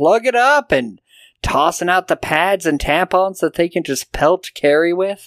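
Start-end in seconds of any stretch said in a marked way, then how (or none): 0.0-0.7 high, bullying, jeering shout, hurled out. Retelling a bullying scene where Sue starts yelling, retelling a shout. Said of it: "just starts shouting".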